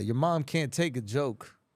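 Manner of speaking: mock-confident, fully self-assured delivery. Retelling how he delivered a joke's punchline: retelling a confident delivery. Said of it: "full confidence".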